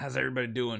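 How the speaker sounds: phlegmy, stuffed-up nasal voice. Greeting viewers at the start of a gaming video, in a phlegmy, nasal voice. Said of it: "all phlegmy and nasally".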